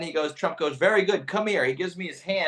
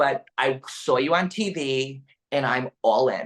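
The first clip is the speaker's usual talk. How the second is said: put-on flamboyant man voice, lower; 3 semitones lower than usual. Retelling a flamboyant man telling Trump he's a new supporter: imitating a flamboyant man.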